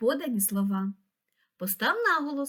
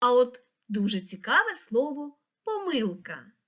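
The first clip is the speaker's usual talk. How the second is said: usual speaking voice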